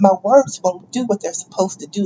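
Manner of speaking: ordinary talk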